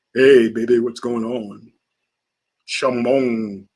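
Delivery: very deep, slow, deliberate put-on voice. Imagining a pop star talking in a different voice, a put-on deep voice. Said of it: "a deep voice".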